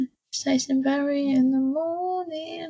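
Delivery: talking through a put-on yawn. Retelling how they came on air yawning: imitating own yawning while talking. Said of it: "I'm actually just yawning".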